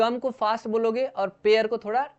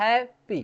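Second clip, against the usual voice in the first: hap of happy hit with stress. Hindi lesson on English word stress, example word happy: stress on hap in happy. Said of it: "है में ज्यादा stress आ रहा है ना".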